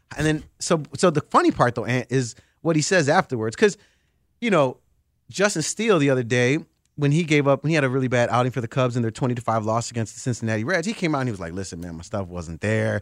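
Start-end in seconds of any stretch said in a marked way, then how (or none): 11.6-13.0 put-on soft, sad, downcast kid voice. Retelling a pitcher's words after a bad outing: imitating Justin Steele as a sad kid. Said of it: "He sounded like a sad kid".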